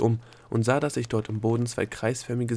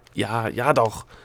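grudging, obstinate, defiant, stubborn tone; 4 dB louder than usual. Dilia answers the Egozette, who asks if she is ready for questioning; defiant. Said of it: "sagte Dilia trotzig".

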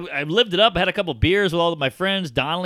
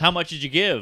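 mock-aggressive, demanding delivery; 3 dB quieter than usual. Speaker retelling a man pressing them on how much they gave, mock-aggressive demand. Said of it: "it was like very aggressive".

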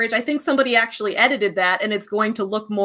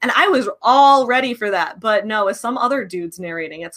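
usual speaking voice

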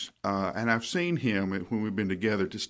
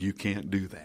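calm, soft near-whisper. Retelling a calm reply to an angry outburst: imitating a calm near-whisper. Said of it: "almost whispers".

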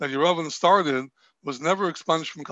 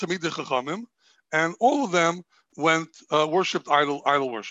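normal talking voice

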